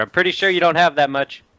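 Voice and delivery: high-pitched yell. In a game, a character climbing back over a wall yells back at guards, yelling back over shoulder. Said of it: "I yell back over my shoulder".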